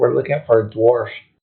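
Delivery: quick, hushed half-whisper aside. The speaker half-whispers in his ear during the game: half-whispering. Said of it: "I'm gonna whisper in his ear".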